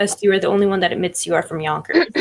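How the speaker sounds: normal talking voice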